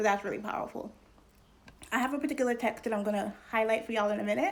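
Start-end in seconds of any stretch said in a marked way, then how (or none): 1.9-4.5 rattled off a little fast. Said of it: "I'm talking a little fast".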